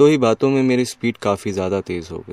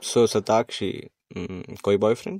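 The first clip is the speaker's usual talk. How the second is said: usual speaking voice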